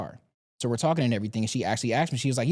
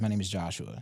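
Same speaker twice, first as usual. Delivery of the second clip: deliberately lowered, low, soft voice; 6 semitones lower, 7 dB quieter than usual. Retelling introducing himself to a woman he approached, in a lowered voice. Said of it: "Now this voice I'm putting on right now".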